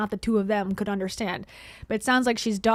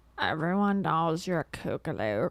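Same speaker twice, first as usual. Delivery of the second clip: put-on low, grating voice of a girl; 5 semitones lower, 4 dB quieter than usual. Mimicking how another speaker just said a word: imitating this girl's voice. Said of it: "This girl's voice, I'm sorry".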